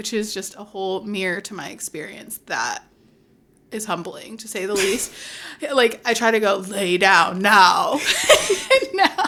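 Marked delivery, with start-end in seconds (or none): 6.6-7.9 motherly mom voice. A mother retelling how she tells him to lie down, mom voice. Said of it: "mimicking my mom voice".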